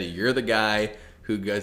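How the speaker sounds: ordinary talk, nothing marked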